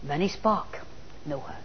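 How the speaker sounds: a man's low, soft put-on Chinese accent. Quoting a man's story about the sparks, imitating his accent. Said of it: "he's got this wonderful accent".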